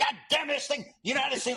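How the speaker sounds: put-on older sportswriter voice.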